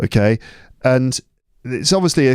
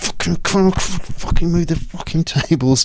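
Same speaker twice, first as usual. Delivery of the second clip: higher-pitched put-on muttering under the breath; 5 semitones higher than usual. Retelling moving classroom tables alone before a lesson: imitating swearing under breath. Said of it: "swearing under my breath".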